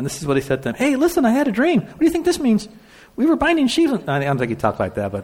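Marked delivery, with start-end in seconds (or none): 0.8-3.9 put-on very high, squeaky, snotty bratty kid voice. Retelling Joseph telling his brothers his dream, as a snotty little kid. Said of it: "just picture this little snotty kid".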